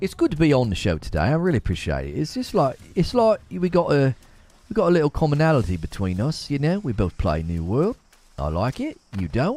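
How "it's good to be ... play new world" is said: put-on, mock English accent. Urged by a co-player to use it on a game character, put-on English accent. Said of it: "You can try your English accent with him".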